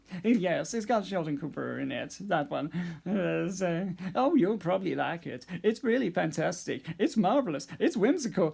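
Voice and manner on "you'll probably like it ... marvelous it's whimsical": quick-fire, rapid, sitcom-character style patter. Showing off your impression of the Big Bang Theory character, a Sheldon Cooper impression. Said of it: "I'm doing an impression. I'm doing a good impression of Sheldon".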